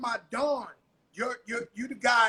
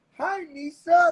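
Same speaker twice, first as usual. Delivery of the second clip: sweet, friendly, raised, pitched-up nice-guy voice; 5 semitones higher, 5 dB louder than usual. Retelling how someone described a greeting: imitating a nice guy voice. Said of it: "stopped and said in a nice guy voice".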